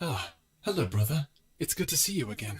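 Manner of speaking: voice run through an effect filter. Demonstrating the filter used for different character voices, voice filter effect. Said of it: "That is the voice of".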